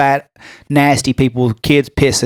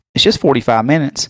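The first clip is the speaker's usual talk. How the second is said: normal talking voice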